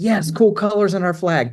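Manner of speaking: high, eager burst of delight.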